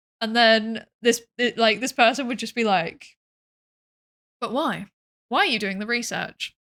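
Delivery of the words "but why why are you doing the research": mock deadpan sarcastic delivery. Retelling someone's comeback to people doing research: imitating a deadpan sarcastic retort. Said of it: "the delivery was so funny 'cause it would literally just be deadpan".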